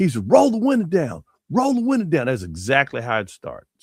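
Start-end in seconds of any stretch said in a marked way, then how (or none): 0.3-2.3 mock screaming, loud and high, repeated. On a two-lane highway, retelling a man screaming orders at them: retelling a screamed command. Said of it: "I heard the guy screaming".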